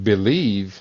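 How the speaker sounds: the word 'believe' stressed. Asking someone a question, stressing the word 'believe'. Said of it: "I got to emphasize the word".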